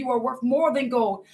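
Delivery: plain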